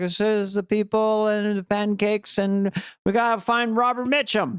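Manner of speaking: rambling speech with jumbled, mashed-together phrases. Describing how Biden actually talked in the debate: rambling Biden impression. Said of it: "he talked like".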